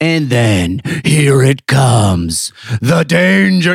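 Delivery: very slow, intense monster truck announcer voice. Imitating a guy's voice from that format: intense monster truck rally voice. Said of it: "it's just like intense".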